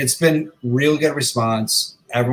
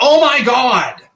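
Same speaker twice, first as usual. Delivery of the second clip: shrill, very loud, high shouted outburst; 13 semitones higher, 7 dB louder than usual. Retelling a woman's reaction when the speaker shows their samples, imitating a very loud exclamation. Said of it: "in the loudest voice".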